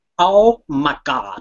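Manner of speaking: put-on American accent, exclaiming. Asked to do their american accent, the speaker shows an american accent. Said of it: "You want me to do my American accent?".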